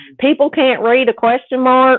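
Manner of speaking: put-on Southern accent. Quoting a woman who belittles people, imitating a southern accent. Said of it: "I'm imitating a Southern accent".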